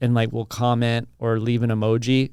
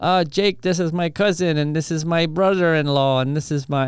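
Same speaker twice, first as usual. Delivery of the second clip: fake Armenian accent, higher pitch; 5 semitones higher than usual. Retelling a family member introducing relatives at a barbecue: bad Armenian accent. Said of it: "I do a bad Armenian accent".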